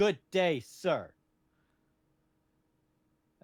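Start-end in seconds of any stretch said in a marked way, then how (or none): 0.0-1.1 loud, high-pitched voice. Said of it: "That was my Willy Wonka impression".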